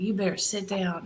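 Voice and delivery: put-on heavy Texas accent, laid on thick. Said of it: "with this real thick accent".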